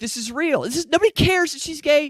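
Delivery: high, fast, mock enthusiastic speaker voice. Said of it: "I thought these people were cheering like".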